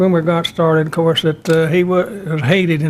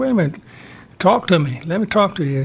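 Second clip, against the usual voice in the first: ordinary delivery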